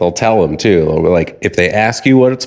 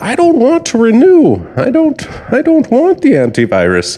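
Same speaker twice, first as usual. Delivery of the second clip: put-on very high, swooping old-person voice. Retelling someone's phone call with a company, doing an old person impression. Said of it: "this is my old person impression".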